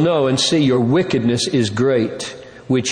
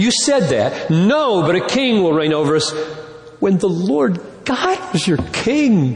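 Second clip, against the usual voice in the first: put-on hurt, stunned, broken, pained disbelief, pitched up; 6 semitones higher than usual. Speaker acting out a reply to people who asked for a king, with broken pain. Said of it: "you can almost hear the broken pain in his voice".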